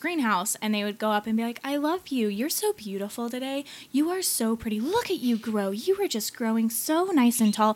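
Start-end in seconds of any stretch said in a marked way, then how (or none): 1.6-7.7 very positive, cheery, upbeat, sing-song, lighthearted voice. Retelling how people in a greenhouse talked to their plants, imitating a positive, lighthearted voice. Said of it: "this very positive, lighthearted voice".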